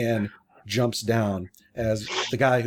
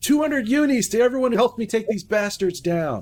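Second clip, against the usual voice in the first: very high yell, called out loudly; 11 semitones higher than usual. Game narrator voicing a character calling out to everyone, yelling. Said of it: "He then yells out".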